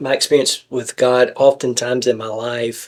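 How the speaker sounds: ordinary talk, nothing marked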